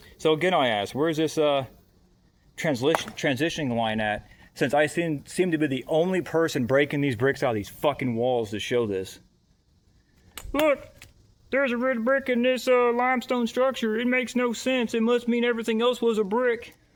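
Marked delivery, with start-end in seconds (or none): 10.5-16.7 very high, sarcastic, mocking voice. Mocking what others claim about a red brick: mock sarcastic imitation of believers. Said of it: "I'm being sarcastic and having fun with it".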